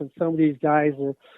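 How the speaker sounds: ordinary delivery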